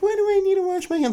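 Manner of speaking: put-on high-pitched thirteen-year-old voice. Recalling their younger self, the speaker uses a high-pitched thirteen-year-old voice. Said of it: "in my high pitched, like, thirteen year old voice".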